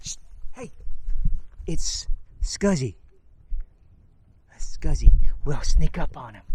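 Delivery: soft, hushed, sneaking whisper.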